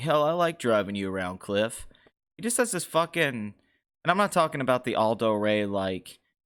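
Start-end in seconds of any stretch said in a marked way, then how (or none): 0.0-1.9 soothing, calm voice like a film star. Praising an actor's voice and quoting his movie line: Brad Pitt impression. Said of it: "he's like".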